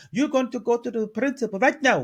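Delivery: badly put-on, high-pitched Spanish accent. Retelling what the lunchroom lady told a girl: bad spanish accent. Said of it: "I can't do a Spanish accent".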